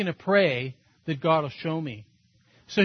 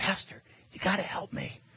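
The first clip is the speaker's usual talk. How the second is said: barely audible urgent whisper; 10 dB quieter than usual. A pastor retells a man's phone call asking for help, retelling a whisper. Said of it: "he's like whispering on the phone".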